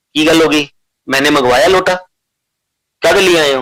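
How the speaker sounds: loud, angry scolding tone.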